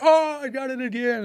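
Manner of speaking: put-on shrill, stretched-out yell, very high. Retelling others in the shower after being sprayed: imitating people screaming. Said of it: "Everybody's in the shower screaming".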